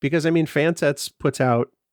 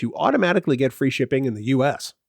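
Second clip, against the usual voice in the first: ordinary talk, nothing marked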